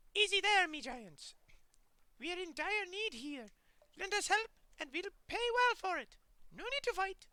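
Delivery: very high, shrill, piping unhuman creature voice. Reading an adventure aloud, the rat corsairs' chief addresses you in a piping, unhuman voice. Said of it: "addresses you in a piping, unhuman voice".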